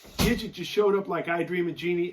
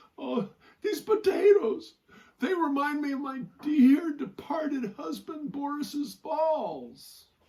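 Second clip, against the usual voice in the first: fake sobbing, high and slow, balls drawn out; 8 semitones higher than usual. Telling a joke, voicing a woman crying over potatoes: mock crying while speaking. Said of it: "she's crying and she's looking at these potatoes".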